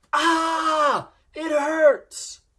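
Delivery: very loud, very high pained cry, drawn-out ah. Speaker demonstrating volume variation in storytelling, yelling in pain. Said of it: "you'd yell that".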